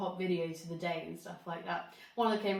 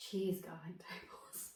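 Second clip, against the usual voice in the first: breathy, hushed, sultry sexy whisper; 10 dB quieter than usual. Reading menu items aloud, in a sexy voice. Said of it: "doing this in a sexy voice".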